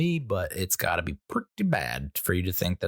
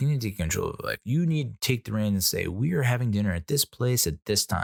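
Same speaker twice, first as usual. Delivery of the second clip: plain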